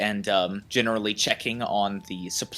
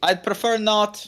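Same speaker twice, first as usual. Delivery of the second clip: loud, shrill, very high-pitched outburst; 11 semitones higher, 4 dB louder than usual. A character answering someone who offers help, said loudly. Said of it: "he says loudly".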